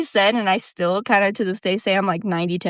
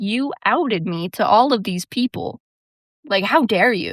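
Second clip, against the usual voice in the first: mock furious, angry ranting outburst. Retelling what was said after the whole school found out: imitating own furious outburst. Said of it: "I was super pissed".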